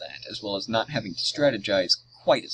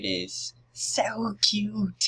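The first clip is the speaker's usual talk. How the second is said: put-on clumsy, terrible, very high girly voice; 11 semitones higher than usual. Speaker quotes a blonde girl character from a game: terrible blonde girl impression. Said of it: "Forgive my terrible impression".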